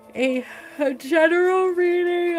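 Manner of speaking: talking through a yawn. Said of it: "I'm yawning".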